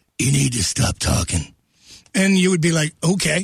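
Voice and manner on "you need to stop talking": very low, rasping tough-guy growl. Retelling what their father would tell his kids, in a Clint Eastwood voice. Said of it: "he'd say in his Clint Eastwood voice".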